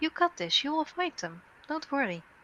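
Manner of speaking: gentle, calming, soothing voice. Telepathically reassuring panicking guards in their minds, in a calming, soothing voice. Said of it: "a calming, soothing voice like".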